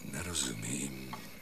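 strange changed voice. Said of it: "Máš jiný hlas?".

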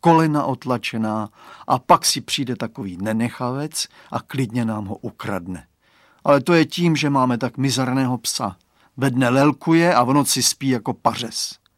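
plain

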